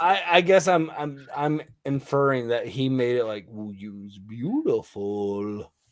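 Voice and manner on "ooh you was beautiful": creepy put-on Russian accent, low and slow. Guessing how another man voiced a line, creepy Russian accent. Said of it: "a creepier Russian accent".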